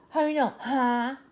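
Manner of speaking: snide, sneering, condescending tone. Retelling asking a teacher for help: imitating a snide teacher. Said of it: "talks snide to me".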